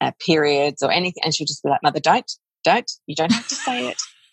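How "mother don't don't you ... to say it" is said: mock weary, exasperated teenage girl voice. Retelling how a thirteen-year-old daughter reacts: imitating an eye-rolling daughter. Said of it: "my thirteen-year-old is just rolls her eyes".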